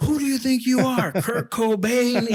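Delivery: very high, drawn-out, screaming yell. Retelling yelling at a long-haired recruit: imitating screaming at recruits. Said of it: "screaming at guys".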